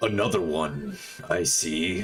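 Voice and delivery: big resounding voice. Narrating a scene where a voice calls out to you: booming voice. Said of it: "you hear a booming voice call out to you".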